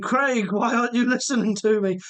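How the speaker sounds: put-on light, childlike calling voice. While reading viewer comments, the speaker relays his son shouting at the phone, imitating Alad shouting. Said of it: "is shouting at the phone saying".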